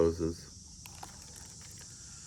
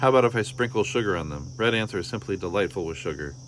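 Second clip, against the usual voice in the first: ordinary delivery, nothing marked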